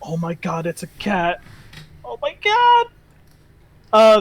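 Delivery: thrilled, gushing, excited, swooping and rising pitch. Narrating a story, voicing two female servants seeing a cat, excited. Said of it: "they're a little frozen with excitement".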